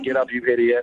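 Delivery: put-on dry sarcastic tone. Recounting proposing a date on one knee, quoting her, retelling a sarcastic reply. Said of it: "really sarcastic".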